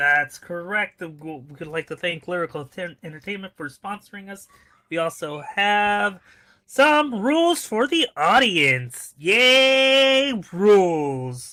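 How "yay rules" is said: loud, sing-song sarcastic cheer, "yay" drawn out. Announcing the audience rules for the sponsored show, saying it sarcastically. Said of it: "he says sarcastically".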